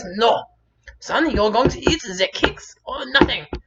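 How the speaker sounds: shrill, very high, loud put-on German mother voice. Retelling the mother refusing in the store: German accent. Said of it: "I guess I'm going to German today".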